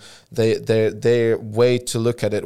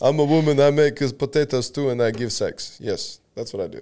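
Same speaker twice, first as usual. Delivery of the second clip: put-on Russian man's voice and accent; 3 semitones higher than usual. Mocking an old-fashioned woman's view for another speaker: put-on Russian man voice. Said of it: "You sound like a Russian man".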